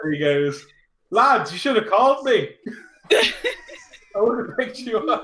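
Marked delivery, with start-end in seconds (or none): 1.1-5.2 put-on accent from Dundalk. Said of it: "This accent is spot on".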